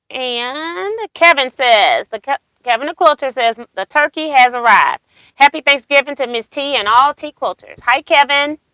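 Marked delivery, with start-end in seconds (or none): none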